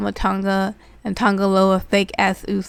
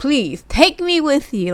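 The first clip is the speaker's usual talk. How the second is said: put-on begging plea, higher; 6 semitones higher, 4 dB louder than usual. Retelling a wrestling segment, quoting a man who wants to leave: imitating someone pleading. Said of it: "just pleading and begging".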